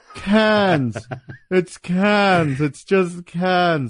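very slow, drawn-out, lingering cans. Quoting a movie scene about a baby stroller: Keanu impression. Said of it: "That's my Keanu impression of that scene".

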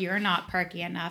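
ordinary delivery

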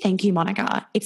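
ordinary delivery

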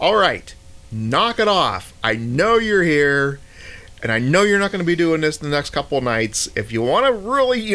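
annoyed yelling. Retelling shouting at whoever was making noise, retelling a yell. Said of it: "I'm like yelling at them because I'm getting annoyed".

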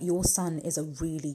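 ordinary delivery

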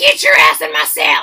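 very loud, demanding, barked yell. Imagining how she would sound in prison: imitating her yelling. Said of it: "That's probably what she would sound like".

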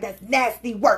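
put-on New York street accent, Brooklyn sound. Imitating a funny TikToker the speaker follows: New York accent. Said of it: "He got that New York accent".

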